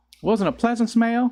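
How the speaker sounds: sudden slip into Southern accent. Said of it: "What happened?".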